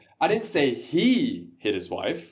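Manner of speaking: "he" stressed, slow delivery with a rising end.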